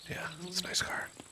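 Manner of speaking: soft, high, unvoiced whisper. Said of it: "I'll whisper now".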